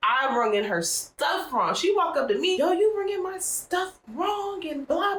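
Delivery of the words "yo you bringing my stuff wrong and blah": put-on, high-pitched, scolding woman's yell. Retelling a woman who walked up cussing the speaker out; imitating a woman yelling. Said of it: "She was just yelling".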